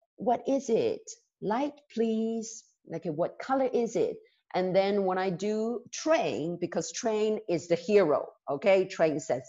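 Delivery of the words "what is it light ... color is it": soft, hushed storytelling voice. Teacher showing the voice used for the door in a class story, soft door voice. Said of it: "I always use um, a soft voice".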